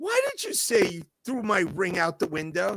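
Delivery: loud, swooping, accusing yell. Retelling finding the lost ring: imitating his own past yell. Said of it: "I remember yelling".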